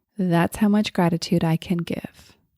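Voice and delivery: plain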